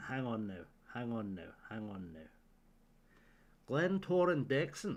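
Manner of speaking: put-on Scottish accent, played for laughs. Trying a line again in a scottish accent. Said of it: "Unless you say it in a Scottish accent".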